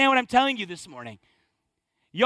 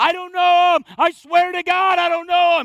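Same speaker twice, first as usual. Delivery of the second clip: high, loud, crazy, madman-like delivery. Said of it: "He gets crazy".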